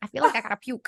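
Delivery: not-great put-on Minnesota accent. Quoting a line from Fargo to the other speaker, in a bad Frances McDormand Fargo accent. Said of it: "Not really great accents".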